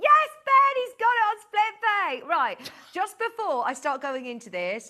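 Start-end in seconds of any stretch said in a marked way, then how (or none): 0.0-2.3 very high and very loud shout. A presenter demonstrating a product range speaks up mid-demo: shouting. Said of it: "sorry to shout".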